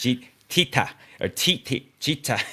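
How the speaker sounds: put-on Korean accent. Recalling the korean guys reading out base pairs, imitating a korean accent. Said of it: "they'd say it in like a Korean accent".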